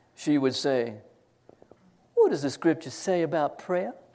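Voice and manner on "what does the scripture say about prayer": put-on honeyed, sweet, syrupy Southern lady accent. Recalling an elderly teacher quizzing her prayer class, in a sweet syrupy Southern accent. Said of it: "nice, sweet, syrupy Southern accent".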